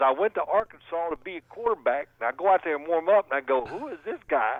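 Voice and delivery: put-on Arkansas accent. Telling a story about his old offensive coordinator, imitating Steve Walters' Arkansas accent. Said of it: "he talked like that, and he's from Arkansas".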